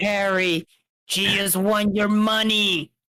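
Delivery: gruff, put-on cartoon crab voice. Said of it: "Why does that sound like Mister Crab?".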